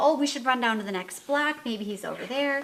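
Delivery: ordinary delivery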